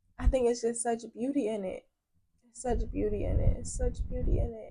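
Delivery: tearful, choked up, right on the edge of crying. Responding to another speaker's words, on the verge of tears. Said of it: "I'm about to cry right now".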